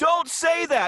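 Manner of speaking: very high, shrill scream. Retelling how Bob banged on the wall during calls: imitating Bob screaming. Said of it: "he's screaming at you".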